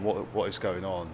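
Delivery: ordinary talk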